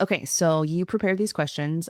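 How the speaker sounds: ordinary talk, nothing marked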